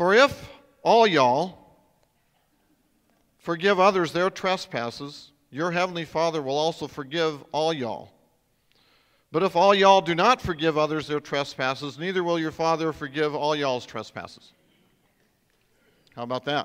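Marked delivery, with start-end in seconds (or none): 0.0-14.5 loud, fake put-on Texas accent. Reading a passage aloud as if from texas, in a put-on texas accent. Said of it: "I'll read it as if I am from Texas".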